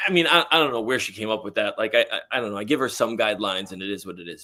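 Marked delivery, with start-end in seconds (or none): none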